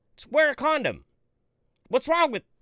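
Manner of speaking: very high, heated, worked-up angry outburst. Speaker ranting to listeners, then apologizing, getting angry. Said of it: "I'm getting all pissed off now".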